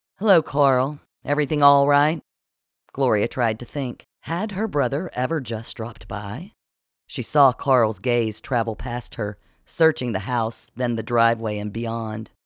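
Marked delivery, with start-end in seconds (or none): 0.2-2.2 spoken on a sigh. Narrator reading a woman greeting her brother at the door, sighing. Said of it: "Gloria sighed".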